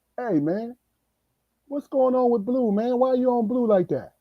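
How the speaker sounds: casual, innocent tone. Acting out a sister-in-law's question: imitating a nonchalant, innocent question. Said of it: "she nonchalantly and innocently say".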